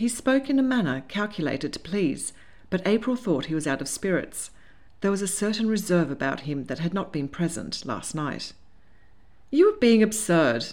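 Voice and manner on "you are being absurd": light, laughing delivery. April answers a man she thinks is out of spirits, laughing lightly. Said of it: "she laughed lightly".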